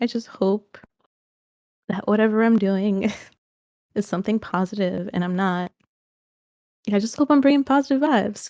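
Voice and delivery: crying, tearful, choked-up voice. Speaker sharing hopes, crying and choked up. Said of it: "I'm crying".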